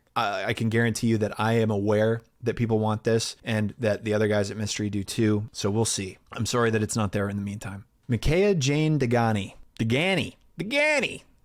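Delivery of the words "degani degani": tried-out Boston accent, pitched up. Repeating a person's surname, trying it out in a Boston accent. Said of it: "is this a Boston?".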